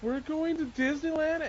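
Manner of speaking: very high, loud voice breaking down in joyful sobs. Speaker retelling how she read the news, imitating her joyful crying. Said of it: "she's like breaking down, crying".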